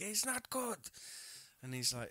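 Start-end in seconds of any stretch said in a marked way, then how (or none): 0.0-0.8 mock, shrill, very high-pitched yelling scream. Retelling how someone on set started screaming at another person: imitating someone screaming. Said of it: "starts screaming at him".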